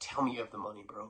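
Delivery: mock pleading tone on the edge of tears. Retelling a plea on the phone for the money: imitating someone almost in tears. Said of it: "almost in te-".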